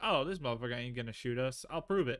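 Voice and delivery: ordinary delivery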